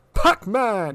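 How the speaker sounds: high-pitched emphatic announcer delivery. Watching a match, the speaker copies how the announcer calls it: imitating announcer's emphatic call. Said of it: "He put some good emphasis on the Pac-Man!".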